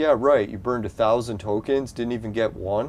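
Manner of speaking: normal talking voice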